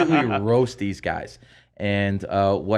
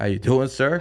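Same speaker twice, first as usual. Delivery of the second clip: lighter voice with less bass; 4 semitones higher than usual. Retelling answering a phone call back, taking the bass out of his voice. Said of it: "I take some bass out of my voice".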